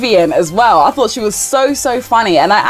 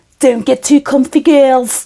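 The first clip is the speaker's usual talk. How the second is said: terrible put-on Scouse accent from Liverpool; 4 semitones higher than usual. Trying a quoted instruction again after calling the first try awful, in a terrible Liverpudlian accent. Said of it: "terrible Liverpudlian accent".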